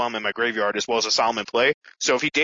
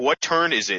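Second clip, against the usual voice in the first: acted strict, no-nonsense tone, stern and curt. Retelling a judge asking what turn it is: imitating a stern voice. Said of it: "asks in a stern voice".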